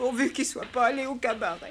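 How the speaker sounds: tearful, weeping voice. A mother worries about the absent father while her child comforts her, crying. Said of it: "pleure donc pas, mère".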